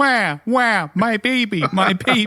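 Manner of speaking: eerie, very high, very slow, drawn-out keening wail. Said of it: "standing stone-faced staring at you going".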